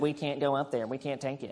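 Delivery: very soft, low, nasally whining voice. Retelling what the scared people said, imitating a nasally whiny voice. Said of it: "they got the nasally whiny voice when they said".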